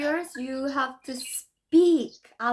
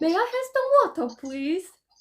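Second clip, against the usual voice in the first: convincing, well-practised British accent, pitched up; 6 semitones higher than usual. Comparing british and american accents, say it in a good british accent. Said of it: "a really good accent".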